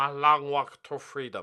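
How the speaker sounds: slow, drawn-out, bad South African accent. Joking that the only accent on offer is an impression: Nelson Mandela impression.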